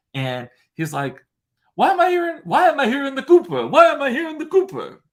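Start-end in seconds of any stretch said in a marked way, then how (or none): 1.7-4.9 shrill, high, loud put-on Italian accent. Retelling what an Italian man said on hearing a voice: Italian accent. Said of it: "I said I wouldn't do the accent, but then I, of course I do".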